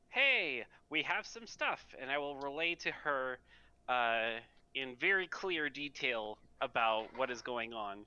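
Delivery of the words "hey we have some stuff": shrill, booming, extraordinarily loud high-pitched yell. Leaning out a door, the speaker yells down to someone below, extraordinarily loud. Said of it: "in an extraordinarily loud voice, I will yell down".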